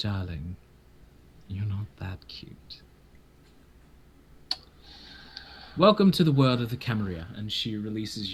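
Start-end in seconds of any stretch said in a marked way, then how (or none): 0.0-7.3 tender and gentle tone. Voicing a character who kisses a player's forehead: tender and gentle. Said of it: "tenderly and gently kiss you on the forehead and say".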